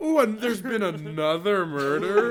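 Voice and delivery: heavy, dripping, extremely sarcastic tone. Acting out a sarcastic slasher movie character: extremely sarcastic. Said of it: "extremely sarcastic".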